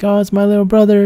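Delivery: acted tearful joy. Retelling his sister greeting him after years apart, imitating tearful happy sister. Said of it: "She's like almost in tears".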